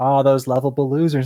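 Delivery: ordinary delivery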